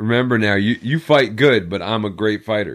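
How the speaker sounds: ordinary delivery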